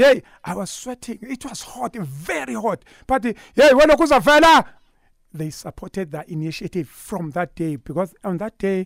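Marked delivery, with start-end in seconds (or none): 3.5-4.7 acted, very high-pitched, crazed, wild shout. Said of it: "shouting like a mad at the rank".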